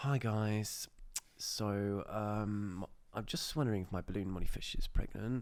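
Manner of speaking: forced husky voice, very slow, drawn-out "I'm". Retelling how she introduced her old video as a kid, in a put-on husky voice. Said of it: "I was trying to put on a husky voice".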